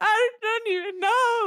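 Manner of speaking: tearful sobbing. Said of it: "I'm just fucking sobbing, crying".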